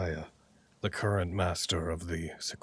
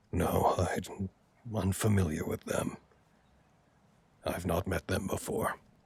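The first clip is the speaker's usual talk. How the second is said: calm, meditative voice. Game master voicing Master Axon answering a player, in a hushed voice. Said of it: "in a kind of hushed voice".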